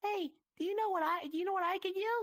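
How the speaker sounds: very high put-on voice. Retelling walking up to a man at a murder mystery, in a high-pitched voice. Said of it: "I'm really high pitched like this".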